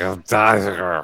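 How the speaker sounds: mock heavy lisp. Retelling someone's joke and quoting how he said it: imitating a heavy lisp. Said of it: "such a hardcore lisp that when he said it".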